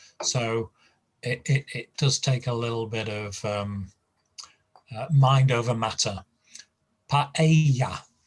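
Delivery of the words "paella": paella with its middle syllable leaned on. Teaching word stress: stress on middle syllable of paella. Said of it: "with the stress in the uh, middle syllable".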